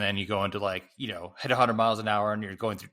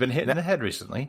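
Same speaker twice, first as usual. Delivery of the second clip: sudden put-on British accent; 4 semitones higher than usual. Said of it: "Why did you do that in a British accent?".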